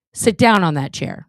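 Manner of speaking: loud, projected voice carrying far. Teaching voice projection, the speaker demonstrates a command: projected across a field. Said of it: "You just say it like that".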